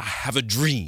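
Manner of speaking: weighty, grave preacher oratory from the pulpit. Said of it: "A little preacher energy".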